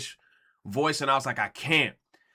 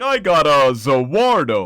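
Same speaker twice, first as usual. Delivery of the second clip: swooping, sing-song voice with pitch swinging up and down; 9 dB louder than usual. Imitating how Dio sounds when he pops up: Dio voice. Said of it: "his voice like that".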